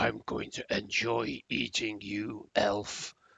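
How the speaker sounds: slow, loud, drawn-out monster voice. Voicing a monster that grabs an elf and lifts him to its face: voicing a grappling monster. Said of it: "looks at you and says".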